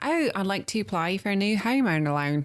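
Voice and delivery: comic-sketch style, put-on Australian accent. Retelling a skit where someone applies for a loan: imitating an Australian accent. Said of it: "this guy does it in Australian".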